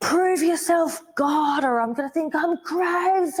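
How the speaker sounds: shrill, very high screaming. Telling a story about themselves, retelling their own screaming. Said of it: "screaming like".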